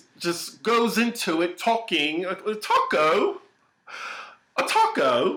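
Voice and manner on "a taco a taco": bad faux British accent, swooping, drawn out. Recapping a show's subplot, the speaker imitates Kelly's faux British accent. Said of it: "I really have to work on my British accent".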